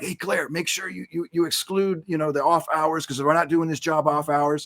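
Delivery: voice kept down, hushed stage whisper. Retelling a half-whispered phone call to a coworker: imitating own half-whisper. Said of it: "but I gotta whisper".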